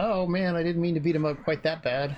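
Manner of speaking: woebegone, sad, apologetic put-on voice. Voicing a game character after a boss fight: mock sad voice. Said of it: "She seems sad about it".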